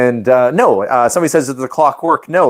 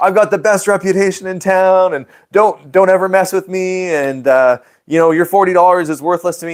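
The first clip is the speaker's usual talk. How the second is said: pitched-up, blustering, mouthing-off rant; 6 semitones higher than usual. Retelling an argument: imitating someone mouthing off. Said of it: "beaking off".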